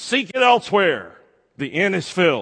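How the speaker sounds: overacted stern voice, high and swooping. Retelling a play scene where Wally refuses Joseph lodging: imitating Wally's stern voice. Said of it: "in that stern voice".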